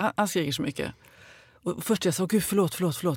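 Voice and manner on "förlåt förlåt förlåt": mock-gentle, sweet and kind tone, much quieter. Retelling apologizing to a shouting man after wobbling on a bike, a sweet, kind apology. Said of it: "så här lite väldigt snällt och vänligt".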